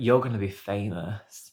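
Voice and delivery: ordinary delivery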